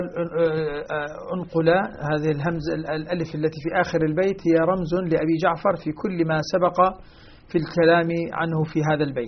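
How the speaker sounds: plain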